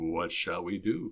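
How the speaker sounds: low, seductive, sexy voice. Retelling a role play, asking a wife a question: imitating a sexy voice. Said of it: "in my best sexy voice asked".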